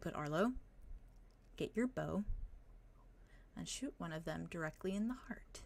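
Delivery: hushed, very quiet whisper. Game master voicing a character who gives orders to a player, whispering. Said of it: "And he whispers".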